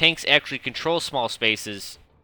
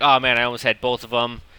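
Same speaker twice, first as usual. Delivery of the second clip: ordinary delivery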